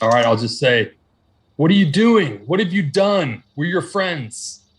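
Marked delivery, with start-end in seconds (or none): 1.6-4.6 high, screamed, pleading voice. Calling out in character to someone attacking the party: screaming out to him. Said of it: "I'm gonna scream out to him".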